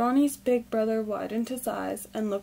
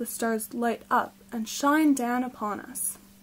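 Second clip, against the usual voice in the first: ordinary delivery, nothing marked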